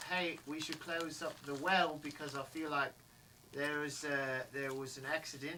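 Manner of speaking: ordinary talk, nothing marked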